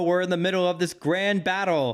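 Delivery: bad mid-Atlantic announcer voice. Describing a TV commercial break, the speaker mimics the Yu-Gi-Oh promo in a bad mid-Atlantic voice. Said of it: "my worst attempt at a uh, mid Atlantic voice".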